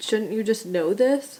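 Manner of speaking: ordinary delivery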